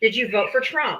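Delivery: angry, irritated snapping. Cutting off another speaker who defends the south: snapping angrily. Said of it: "I didn't mean to snap at you".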